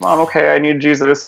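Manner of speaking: put-on pleading through tears, crying. Retelling words said to an upset mom: imitating own past crying. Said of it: "I'd cry and I'd be like".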